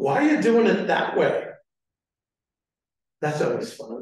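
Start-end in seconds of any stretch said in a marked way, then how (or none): 0.0-1.4 judgmental, disapproving, critical tone. Showing a coworker's remark behind someone's desk: judgmental tone. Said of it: "It's all judgmental right there".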